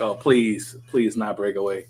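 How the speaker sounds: disdainful, scornful voice dripping with contempt. Retelling Blossom's line from a script: imitating Blossom's disdain. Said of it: "you could sense the disdain in Blossom's voice".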